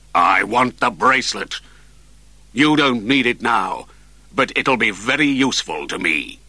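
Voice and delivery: cruel voice and tone. Borgon answers Karen, his voice turning cruel. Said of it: "Borgon's voice changed. It was cruel now".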